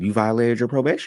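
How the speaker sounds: polite, pleasant sweet voice. Retelling the officer saying you violated probation: imitating a nice voice. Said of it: "also in a nice voice".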